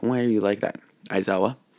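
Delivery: plain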